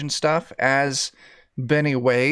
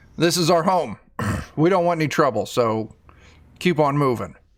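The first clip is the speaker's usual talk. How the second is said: ordinary talk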